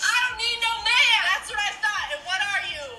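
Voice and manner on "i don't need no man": loud, high, forceful, emphatic voice. Repeating a line after being told to say it louder: louder, really meaning it. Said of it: "Say it louder and like you fucking mean it".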